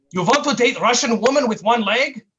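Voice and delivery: Russian-accented English. Voicing a pop-up web ad in a put-on Russian accent. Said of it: "That's my Russian accent".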